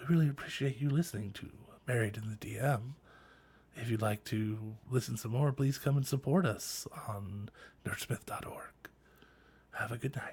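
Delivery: put-on soft, hushed ASMR whisper. Closing the podcast by thanking listeners: put-on asmr voice. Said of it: "do the A S M R voice now".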